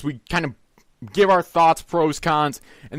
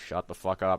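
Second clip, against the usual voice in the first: put-on mutter under breath, lower and quieter; 9 semitones lower, 11 dB quieter than usual. Retelling what was said to noisy kids in a theater: imitating muttering under breath. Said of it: "under my breath".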